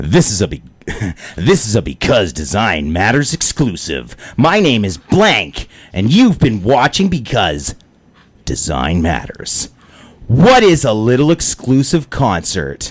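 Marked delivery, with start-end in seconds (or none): 0.0-9.7 low, swooping radio announcer voice. Asked to read a show intro, the speaker does it in a radio announcer voice. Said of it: "You want me to do it in a radio voice?".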